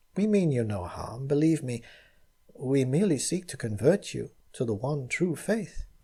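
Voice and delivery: sweet and gentle delivery. Reading a story, the narrator voices Zuleika in a sweet, gentle voice. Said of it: "said Zuleika in a sweet, gentle voice".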